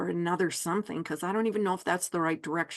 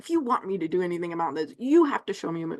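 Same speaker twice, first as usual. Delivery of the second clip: grumpy, grudging, take-it-or-leave-it tone. Retelling a demand for a sign: imitating own cranky tone. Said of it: "I was kinda cranky about it".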